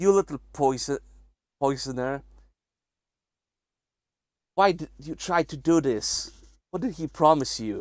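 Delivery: vicious snarling, aggressive and close. A game master voices a character pinning someone down and accusing them, snarling. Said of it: "You saying with a snarl in your face".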